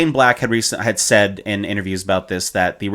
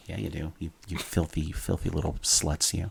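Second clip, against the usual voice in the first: very hushed, raspy, put-on whisper; 4 semitones lower, 12 dB quieter than usual. Joking to listeners about their ear holes: put-on whispery raspy voice. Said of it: "letting the voice kinda get a little bit whispery and raspy".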